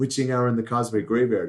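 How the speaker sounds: usual speaking voice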